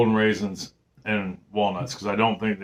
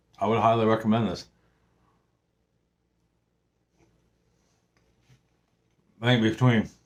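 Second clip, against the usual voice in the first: speaking with mouth full of food. Tasting the baked treats and recommending the recipe, talking with mouth full. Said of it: "shouldn't talk with my mouth full".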